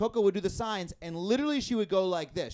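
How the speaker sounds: usual speaking voice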